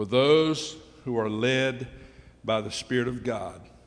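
very slow, low, deliberate reading. A speaker reading a scripture passage aloud to listeners, very slow reading. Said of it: "So I'm going to read this slowly".

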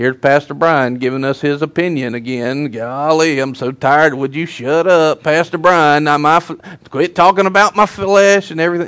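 put-on Southern gentleman accent. Acting out the flesh's voice during a service, in a Southern gentleman voice. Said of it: "It's like a Southern gentleman".

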